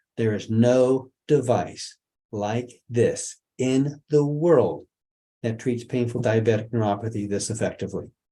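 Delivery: measured, word-by-word pace. Repeating the previous statement to listeners, said a little slower. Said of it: "Let me say that again a little bit slower".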